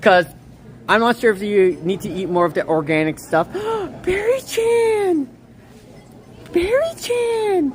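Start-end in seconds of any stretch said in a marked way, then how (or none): 4.0-7.7 high, slow, drawn-out excited squeal. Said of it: "I'm usually not like this".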